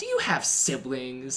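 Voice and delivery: really smug, self-satisfied, needling tone. Retelling how Cheryl questioned someone who was getting upset: imitating Cheryl's smug voice. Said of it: "in a really smug voice".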